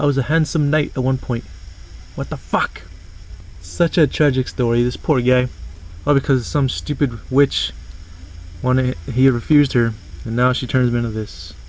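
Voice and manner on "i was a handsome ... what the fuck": exasperated, frustrated ranting. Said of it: "He's like".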